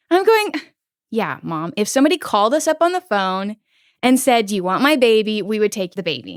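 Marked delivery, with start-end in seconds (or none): none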